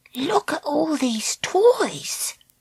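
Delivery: very high, slow, hushed whisper. Reading a story aloud, voicing a girl looking at toys: whispering. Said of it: "whispered Treacle".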